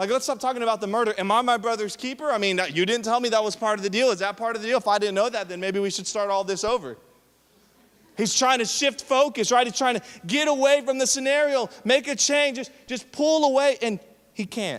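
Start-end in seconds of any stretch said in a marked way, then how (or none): none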